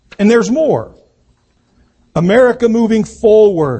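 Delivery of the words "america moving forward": forward stressed, a bit louder. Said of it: "Emphasis on the word forward".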